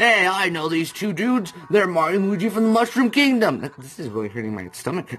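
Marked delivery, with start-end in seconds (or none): 0.0-3.6 tight-throated character voice, much higher. Voicing a character who recognizes two brothers, in a throat-closed character voice. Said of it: "to do this voice, I'm kind of closing my throat".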